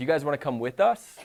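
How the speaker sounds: pitch climbing steadily toward final "us". Teaching English question intonation, an example question with rising pitch on final us. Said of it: "when we're asking a question, ... Pitch goes up".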